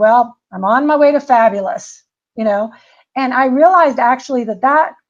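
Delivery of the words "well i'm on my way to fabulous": mock sarcastic tone. Retelling a reply to a child who asked how it was going: imitating own sarcastic remark. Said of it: "kind of sarcastically".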